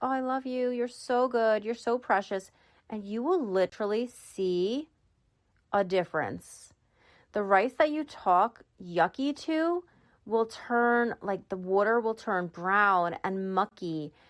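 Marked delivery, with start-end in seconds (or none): 0.0-2.5 tender, doting, sweet and loving tone. Showing how to talk to rice in water: talking sweetly. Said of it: "the other one you talk sweetly to".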